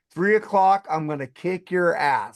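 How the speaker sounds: ordinary talk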